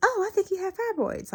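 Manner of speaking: super high-pitched, piping tone. Recalling what she was told during her pap smear, in a super high-pitched voice. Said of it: "like in this super high pitch voice".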